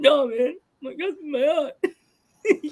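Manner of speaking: very high, very slow, tearful put-on blubbering crying. Imitating a friend denying he is crying on the podcast: imitating someone crying. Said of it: "Geek just starts breaking down".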